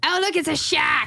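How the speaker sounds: put-on Australian accent. Showing off an accent he can do, Australian accent. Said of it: "I can do an Australian person".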